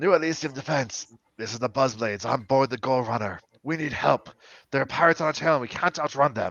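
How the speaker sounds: rough, gruff, distressed voice. A crew member calls for help over the radio, in a gruff voice. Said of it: "you hear a kind of gruff voice".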